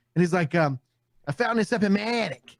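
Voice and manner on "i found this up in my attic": put-on Boston accent, much higher. Retelling what a man said about a find, imitating a Boston accent. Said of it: "so they had like a Boston accent".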